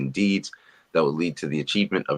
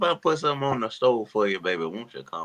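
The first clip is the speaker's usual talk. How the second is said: put-on high-pitched old Southern grandmother voice, Southern accent; 6 semitones higher than usual. Inviting someone to come over, in an old Southern grandma voice. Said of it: "you sound like that old Southern grandma".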